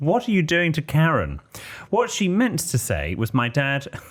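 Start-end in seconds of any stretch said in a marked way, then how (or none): 0.0-1.4 put-on high, shocked, alarmed scream. Calling her dad and re-enacting what she yelled at him: retelling a scream. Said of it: "I screamed".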